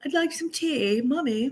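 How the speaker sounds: bad fake British accent. Speaker admits having the worst british accent, then shows it: bad british accent. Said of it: "I have the worst British accent".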